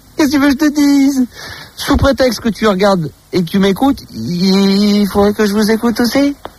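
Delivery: playful, teasing mock outrage, il drawn out. Speaking to a woman who says she watches and listens to him, teasing. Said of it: "je suis en train de te taquiner".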